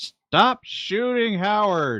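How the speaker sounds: slow, high yelling. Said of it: "yells out".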